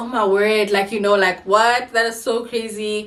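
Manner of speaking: ordinary talk, nothing marked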